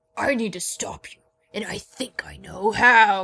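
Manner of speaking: foreboding tone.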